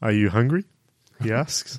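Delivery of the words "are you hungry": put-on, mock seductive, sexy voice. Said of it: "I'm trying to do the sexy voices".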